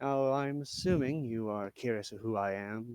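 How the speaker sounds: hushed, sinister, menacing, threatening tone. Acting a character's line in a conversation with others, in a menacing voice. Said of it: "I'm gonna do his menacing voice".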